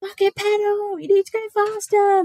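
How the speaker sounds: put-on shrill, very high, drawn-out shout. Retelling how spectators at races yell at riders: imitating spectators shouting. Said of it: "they're just literally shouting at you".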